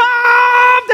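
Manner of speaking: put-on very high, loud screaming child voice. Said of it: "let's just start screaming".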